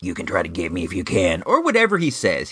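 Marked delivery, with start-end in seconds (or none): 0.0-1.4 growly, low, fast action-hero voice. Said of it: "talking in that growly voice".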